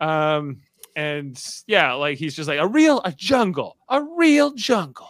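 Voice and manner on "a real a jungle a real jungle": high, announcing voice like a reveal. Imitating a TV host's words: Jeff Probst impression. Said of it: "that's more of my Jeff Probst impression".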